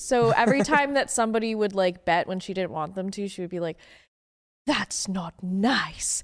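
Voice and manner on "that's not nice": put-on Eastern European accent, much slower. Retelling what a woman said when someone bet, imitating her eastern european accent. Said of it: "very Eastern European".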